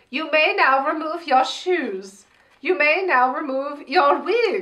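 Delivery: put-on German accent. Playing out a convention of Sasha Velour impersonators, German accent. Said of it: "In a German accent".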